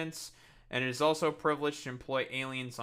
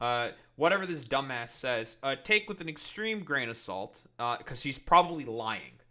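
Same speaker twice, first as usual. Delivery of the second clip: plain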